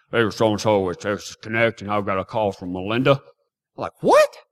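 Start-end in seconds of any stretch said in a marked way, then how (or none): 0.1-3.1 put-on deep male voice, pitched much lower. Retelling an unexpected phone call, quoting the caller, imitating a deep-voiced man. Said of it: "this deep-voiced man".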